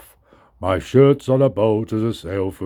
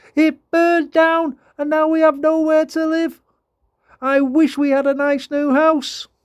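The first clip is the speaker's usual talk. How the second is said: tiny, very high, squeaky mouse voice. Narrator reads the mother mouse's reply to George, squeaking. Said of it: "squeaked the mother mouse".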